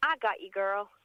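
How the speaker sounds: gorgeous put-on Louisiana accent. Retelling how a woman in country music answered a thank-you, louisiana accent. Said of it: "in a gorgeous Louisiana accent".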